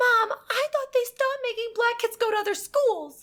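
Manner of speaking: put-on very high, loud child's yell. Retelling a son's remark at a garden on a field trip: imitating a child loudly yelling.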